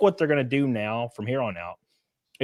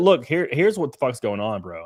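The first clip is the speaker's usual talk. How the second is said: ordinary delivery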